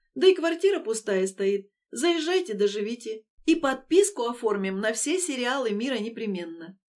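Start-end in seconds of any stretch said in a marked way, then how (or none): none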